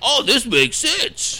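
very high, slow, caricatured mock old-man voice.

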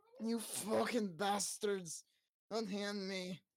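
put-on sloppy, drunk outburst. As Baldrick, handcuffed and brought before the guards, shout drunkenly at them. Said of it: "Baldrick's gonna shout drunkenly at them".

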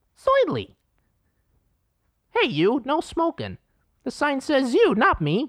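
very high, swooping, bouncy squeaky voice. Going through impressions, the speaker does Curly from the Three Stooges. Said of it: "What about Curly from Three Stooges?".

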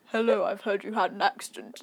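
put-on, deep, sexy, seductive voice. Retelling a phone call when his partner came on the line, imitating a deep sexy voice. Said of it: "this really deep, sexy voice came on".

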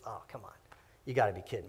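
very soft, mock scornful, derisive scoff. Preaching on God laughing at the raging nations: imitating mocking laughter. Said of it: "He's mocking their clenched fists".

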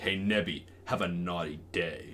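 low, deep, slow, dead-serious drawl. Imitating Jason Momoa with a very serious face: serious Jason Momoa voice. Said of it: "It's a very serious face ... he said it in that way".

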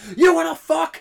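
put-on angry scream. Retelling what he screamed during a standoff: imitating an angry scream. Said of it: "he screams the immortal phrase".

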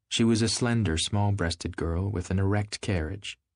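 plain

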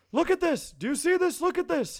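very high, shrill scream. Retelling a video call from a father at a nursing home: retelling a scream. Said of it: "he's screaming".

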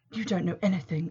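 misty, breathy whisper. The narrator barely manages to answer Hunter's accusation, in a misty whisper. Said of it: "The words came out in a misty whisper".

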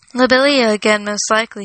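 ordinary delivery, nothing marked

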